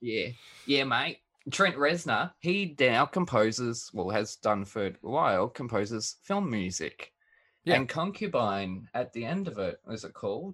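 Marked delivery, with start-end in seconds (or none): 0.7-2.3 put-on broad Australian bogan accent. Co-host tells him to Aussie it up while saying the name: broad Aussie bogan accent. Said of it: "You got to Aussie it up".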